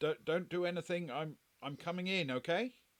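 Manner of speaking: hesitant, halting voice. A voice at the office door announces itself, slightly tentative. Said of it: "kind of slightly tentatively".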